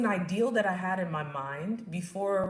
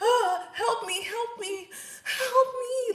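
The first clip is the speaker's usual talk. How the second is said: shrill, very high, slow, dragged-out puny cry; 4 dB louder than usual. Retelling her cries for help as labor contractions got intense, imitating puny crying. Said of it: "puny type of crying".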